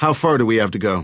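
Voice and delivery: ordinary delivery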